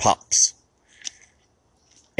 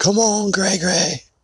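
high scream, called out. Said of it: "So I screamed over my right shoulder".

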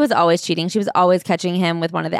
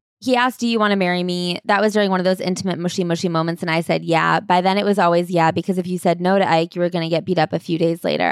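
ordinary delivery

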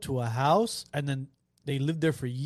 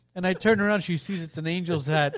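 plain

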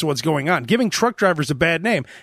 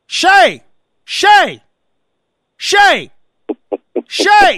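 very high, very slow, drawn-out swooping yell; 12 semitones higher, 8 dB louder than usual. Retelling how a woman kept yelling for her daughter, imitating someone yelling. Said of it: "she kept yelling".

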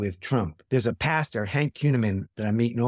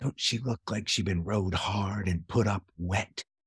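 soft, hushed, close stage whisper; 3 semitones lower, 6 dB quieter than usual. Retelling what a grandmother half-whispered in the speaker's ear: imitating a half-whisper. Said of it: "she leans into me and she whispers in my ear".

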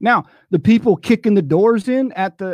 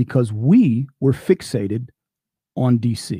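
very slow, slowed-down speech; 8 semitones lower than usual. A speaker making a point to listeners, speaking very slowly. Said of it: "let me say this very slowly".

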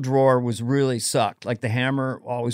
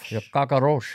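put-on Cuban accent with altered voice quality. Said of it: "Al Pacino doing a Cuban accent".

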